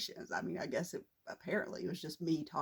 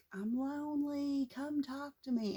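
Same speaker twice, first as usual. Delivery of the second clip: very high, very slow, drawn-out put-on wailing scream; 9 semitones higher than usual. Retelling how a nursing home roommate would scream: imitating someone screaming. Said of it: "she would scream".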